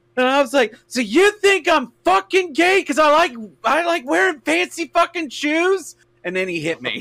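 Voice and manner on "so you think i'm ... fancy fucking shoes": shrill, very high-pitched screaming yell. Telling how he mocked their clothes and shoes, the speaker reenacts their reply: retelling a yell. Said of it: "And I screamed, I just yelled".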